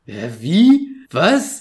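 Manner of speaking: startled, shocked, confused, bewildered outburst. Speaker retells someone's sudden reaction, acting out a shocked reaction. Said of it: "so ein Schockmoment".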